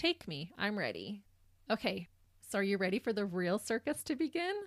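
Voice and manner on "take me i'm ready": normal talking voice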